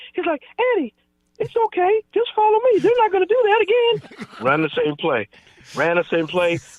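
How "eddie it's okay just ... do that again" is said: very high-pitched voice swooping up and down. Retelling what a big player told an injured teammate in the huddle, in Lorenzo's high voice. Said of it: "but he had a high voice".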